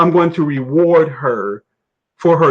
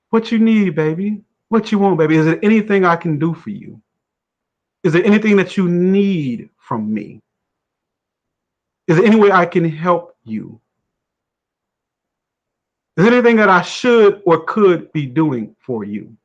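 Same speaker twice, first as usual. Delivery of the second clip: put-on soft, beautiful voice. Speaker acting out what a woman should say to her man, in a soft, beautiful voice. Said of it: "She should be saying in her soft, beautiful voice".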